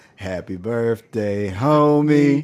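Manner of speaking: put-on half-hearted, homie stretched. Showing what an unconvincing reply sounded like: imitating an unconvincing happy birthday. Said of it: "Just unconvincing and just like".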